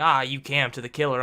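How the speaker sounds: plain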